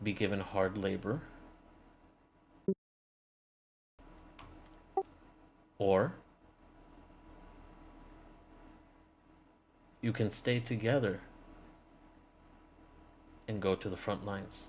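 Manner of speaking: grave weighty tone. Voicing a woman who gives two accused team members their choice, much more serious tone. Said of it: "In a much more serious tone".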